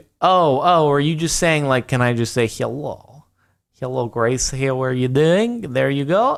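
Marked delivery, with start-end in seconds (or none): 3.8-5.7 fake, put-on Russian accent. Asked to say hello in a Russian accent, greeting Grace in a fake Russian accent. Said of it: "can you give a Russian high low to?".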